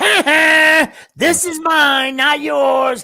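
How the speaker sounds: shrill, very high, loud, drawn-out cartoon voice. Retelling what grandpa says when he visits Kimmy, in a Simpsons-character voice. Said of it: "you sounded like a Simpsons character".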